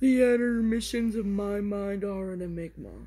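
dopey, dim-witted, dumb-sounding cartoon voice. Voicing a game character meant to be dumb, speaker says his line in a dumb voice like Patrick. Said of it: "He's supposed to be like dumb, so like Patrick".

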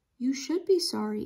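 tired, worn-out voice. Narrator reads Auntie's reply to Kaya, in a weary voice. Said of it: "Auntie said in a weary voice".

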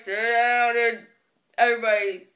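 low voice cracking mid-line. Friends recalling their old bus driver, imitating his voice crack. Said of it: "our old bus driver used the voice crack all the time".

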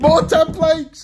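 thrilled, gushing, really excited outburst. Unboxing a game box and finding templates: really excited. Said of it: "I'm getting really excited now".

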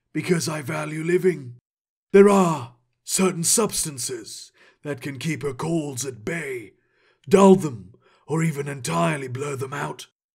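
put-on dark, raspy voice with refined, scholarly accent. A narrator reads the cat-eyed man answering the vizier: dark, raspy, refined voice. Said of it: "Only a man with silvery skin and cat eyes met his gaze. ... the cat-eyed man's voice was dark and raspy. ... His accent was refined, like a scholar's might be".

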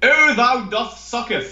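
put-on theatrical English accent. Suggesting dramatic reenactments and giving a sample Shakespearean reading; faux Shakespearean English accent. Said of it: "really sort of faux English dramatic accents. A Shakespearean reading of".

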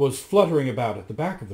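plain reading voice

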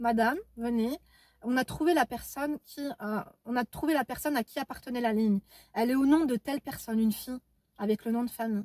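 ordinary talk

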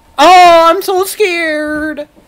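sarcastic mock fright, high and very slow.

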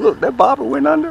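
thrilled, excited, very high-pitched, very loud burst. While fishing, the speaker sees the bobber go under, excited. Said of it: "I gotta lower my voice because I'm getting excited".

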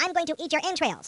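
very high barking delivery, pitched way up. A game reviewer quotes the hokey battle taunts, Kilrathi barking taunt. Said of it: "the Kilrathi barking out hokey taunts".

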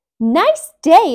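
bright, high, very loud exclamation. Emmy answers Perry the porcupine's greeting, exclaiming. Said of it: "exclaimed Emmy".

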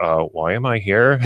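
ordinary delivery

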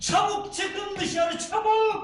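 yelling, high and drawn out. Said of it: "Bağırma evladım".

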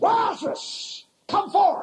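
mock mighty, commanding cry, called out loudly. Retelling the scripture scene at the tomb of Lazarus: loud cry. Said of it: "He cried with a loud voice".

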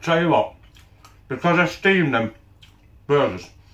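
speaking with mouth full of food. Eating steamed burgers, talking with a mouth full of food. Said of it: "I do apologise for talking with my mouth full".

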